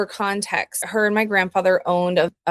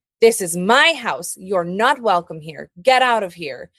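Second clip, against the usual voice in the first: put-on firm, insistent tone. Recalling what the speaker's grandmother would say, imitating her firm tone. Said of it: "just very firmly claiming her space".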